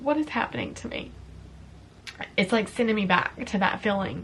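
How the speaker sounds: tearful, crying, voice breaking while talking. Talking to viewers about a candle that brings back a feeling, crying while speaking. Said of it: "I am literally crying right now".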